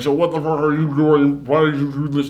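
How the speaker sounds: put-on distorted voice. Retelling a scene where a pixelated video caller speaks: imitating a distorted voice. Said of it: "that kind of distorted".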